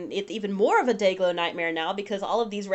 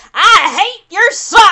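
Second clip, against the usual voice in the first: shrill, very high, very loud scream; 12 semitones higher, 17 dB louder than usual. A woman stands up to air a grievance at her husband, yelling. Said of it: "Tahani stands up and yells at her husband".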